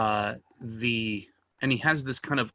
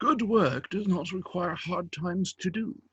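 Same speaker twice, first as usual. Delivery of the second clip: put-on elderly man voice, pitched higher; 8 semitones higher than usual. Voicing a character at an inn asking for work: old man's voice. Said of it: "sorry, the old man's voice".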